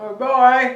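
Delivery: muffled through a full mouth. Saying goodbye at the end of a cooking video, talking with mouth full. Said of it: "still got my mouth full".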